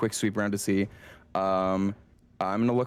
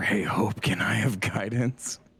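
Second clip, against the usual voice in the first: hushed whisper. Mirror whispers a request to Hope during the game: whispering. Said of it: "Mirror is gonna whisper".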